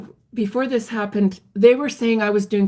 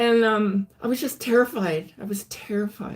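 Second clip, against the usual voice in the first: usual speaking voice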